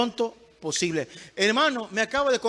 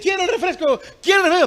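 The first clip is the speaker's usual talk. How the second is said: put-on loud, high, demanding child's yell, repeated; 8 semitones higher, 8 dB louder than usual. Speaker acts out a child demanding something from a parent; imitating a child shouting. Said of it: "pero no grites".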